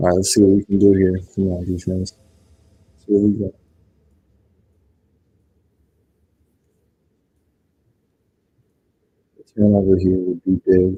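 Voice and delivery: hushed whispering voice. Streaming live while family is asleep, whispering. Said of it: "you're wondering why I'm whispering".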